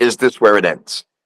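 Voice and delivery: ordinary talk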